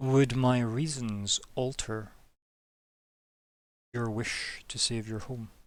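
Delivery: slow, soft, hushed, pointed near-whisper.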